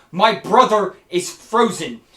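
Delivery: very loud, slow, drawn-out freaking out. Voicing a character who finds her brother frozen: freaking out. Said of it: "you can hear her freaking out".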